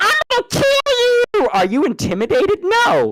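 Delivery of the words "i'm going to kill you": tiny, squeaky, very high-pitched voice. Arguing a small attacker wouldn't intimidate anyone, acting out its threat: high-pitched put-on voice. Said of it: "a midget with a high pitched voice runs up to you like".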